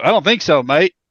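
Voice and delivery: terrible fake Australian accent. Retelling what a police officer said to a stabbed man: terrible australian accent. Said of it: "that was Australian. That was terrible".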